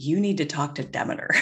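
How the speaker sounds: ordinary delivery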